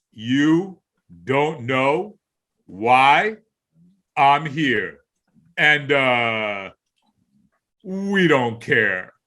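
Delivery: painfully slow, very low, dragging drawl. Retelling how a man on the mic taunted a booing crowd, imitating extremely slow talk. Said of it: "would talk as slow as you could imagine".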